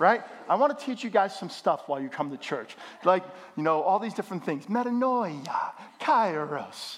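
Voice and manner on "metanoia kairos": slight put-on Italian accent on both words. Teaching church words to the congregation: Italian accent. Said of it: "That was kinda like with an Italian accent".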